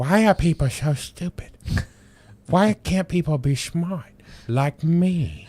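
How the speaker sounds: very high, squeaky cartoon puppet voice. Retelling how a cartoon mocked Kim Jong-il: imitating Kim Jong-il puppet. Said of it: "South Park just roasted him in that. He's like".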